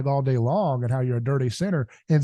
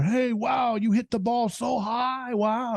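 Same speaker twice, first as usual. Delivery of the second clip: put-on slow, high-pitched, condescending, patronizing baby talk; 9 semitones higher than usual. Showing a patronizing way of praising: patronizing, talking to a toddler. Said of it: "like talking to a toddler".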